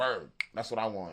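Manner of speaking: usual speaking voice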